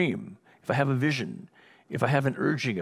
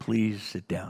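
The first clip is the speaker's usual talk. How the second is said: hushed, calm, steady, firm voice with conviction; 5 semitones lower than usual. Retelling a driver's warning near lions: retelling a quiet, calm command. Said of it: "He said it really quietly but calmly".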